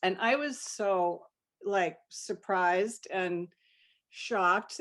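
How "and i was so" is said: plain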